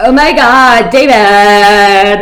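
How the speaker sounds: overdramatic Broadway-style character voice. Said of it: "she was always like".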